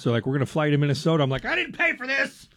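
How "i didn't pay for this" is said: very high, put-on grumpy man grumble. Retelling reaction to a rerouted flight home: put-on grumpy man voice. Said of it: "I love your grumpy man voice".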